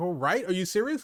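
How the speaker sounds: normal talking voice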